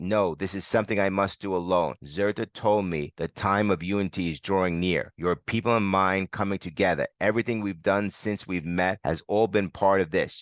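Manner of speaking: ordinary talk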